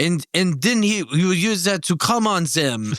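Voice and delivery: put-on English spoken in an Egyptian accent. Retelling what another Scouter kept saying: imitating an Egyptian accent. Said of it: "In his Egyptian accent".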